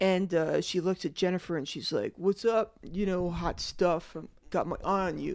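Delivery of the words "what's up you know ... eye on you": put-on slick cool-guy voice, quieter. Retelling how Bobby greets Jennifer from a car: very slick, James Dean. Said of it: "very slick, James Dean".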